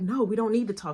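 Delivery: imitated heated, angry voice. Retelling what a friend said in the bathroom: imitating a heated friend. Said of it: "when I say she was heated".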